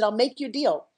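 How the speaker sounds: ordinary talk, nothing marked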